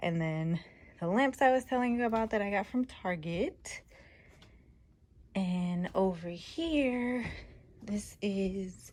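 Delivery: winded, catching air. Showing viewers around after going up and down the stairs, out of breath. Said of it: "I'm winded from going up and down the stairs".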